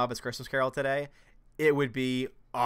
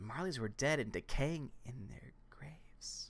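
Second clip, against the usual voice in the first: hushed, very quiet whisper for dramatic emphasis; 13 dB quieter than usual. Reading a line aloud to a listener, for dramatic emphasis, whispering. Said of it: "Why are you whispering?".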